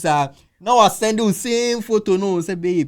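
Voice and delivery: high-pitched, loud, excited, coaxing delivery.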